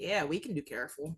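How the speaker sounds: dry, sarcastic tone. Answering a warning to be careful: sarcastic. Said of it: "That was a sarcasm".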